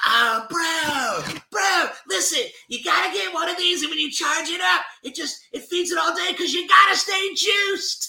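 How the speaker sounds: very high pitch, every bro stretched out. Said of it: "I can do [name] pretty good".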